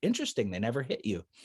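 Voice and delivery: dry, sarcastic, acted-out delivery. Retelling own past reply, imitating own sarcastic remark. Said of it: "in my sarcastic thing".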